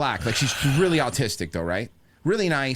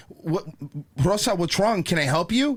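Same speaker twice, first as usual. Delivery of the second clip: mock-panicked manager-style voice; 4 semitones higher than usual. Retelling a store incident, the speaker quotes the manager, imitating a panicked manager. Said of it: "The manager's walking up all panicked and goes".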